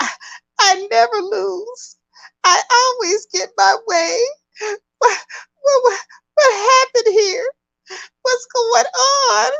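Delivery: put-on sobbing in a very high voice. Retelling a celebrity's reaction to news, imitating Kim Kardashian crying. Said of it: "Kim is crying".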